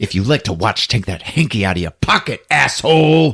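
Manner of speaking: close, menacing growled voice. Retelling a movie scene where a character growls into someone's face: imitating a growl. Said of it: "growls into his face".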